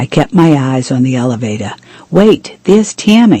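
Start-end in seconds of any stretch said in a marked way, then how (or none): 2.1-3.4 abrupt, high, sudden yelp of surprise. George, watching hotel footage, spots tammy: yelping. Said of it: "George yelped".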